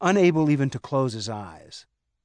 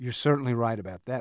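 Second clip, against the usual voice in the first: usual speaking voice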